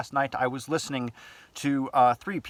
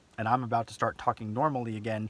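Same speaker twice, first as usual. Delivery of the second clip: ordinary delivery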